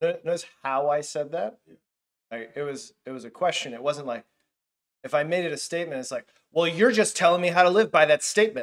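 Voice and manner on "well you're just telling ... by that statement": menacing, pointed, threatening, raised and pitched up. Showing how a statement differs from a question, the speaker sounds threatening. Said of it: "so that way it felt more threatening".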